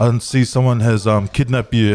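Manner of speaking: ordinary delivery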